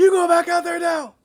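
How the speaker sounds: acted out, very loud, very high, furious bark. Joining a retelling of an angry chef: imitating an angry chef yelling. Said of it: "apparently I'm yelling too loud".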